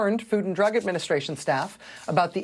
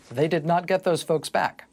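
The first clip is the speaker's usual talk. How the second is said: grand, big documentary-style narrator voice; 3 semitones lower than usual. Cutting in on a news commentary as the narrator: big narrator voice. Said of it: "the big narrator voice comes in and says".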